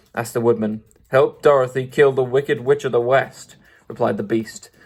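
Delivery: ordinary delivery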